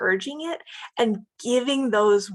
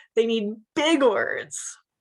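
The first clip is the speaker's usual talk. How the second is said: normal talking voice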